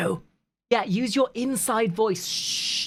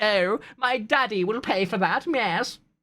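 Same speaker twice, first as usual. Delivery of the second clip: put-on slow, entitled, spoiled rich-girl drawl. Mocking rich spoiled girls paying a fine: imitating a spoiled rich girl.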